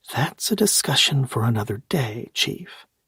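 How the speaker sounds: secretive, confiding, conspiratorial stage whisper. The narrator answers the Chief's question to the Admiral, in a conspiratorial whisper. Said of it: "I whispered in a conspiratorial voice".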